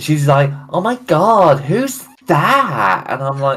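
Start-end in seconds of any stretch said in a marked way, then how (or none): 0.7-3.1 put-on very slow, high, drawn-out, grating annoying girl voice. Retelling what a girl said about his sketchbook, imitating an annoying girl. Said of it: "the way you portray this girl".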